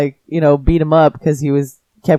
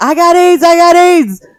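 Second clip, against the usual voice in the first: very high, loud, shrill, drawn-out screaming; 13 semitones higher, 5 dB louder than usual. Retelling how a man on the ground screamed in the street: imitating someone screaming. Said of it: "just started screaming in the middle of the street".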